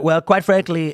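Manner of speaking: goofy, nasal, gravelly politician voice. Showing how a Trump impression sounds: Trump impression. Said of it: "Trump might talk like this and say".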